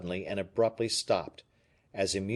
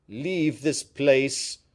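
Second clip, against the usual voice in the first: menacing, threatening voice, raised and pitched up; 5 semitones higher, 5 dB louder than usual. A man orders another man to leave this place, in a threatening tone. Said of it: "in a threatening tone".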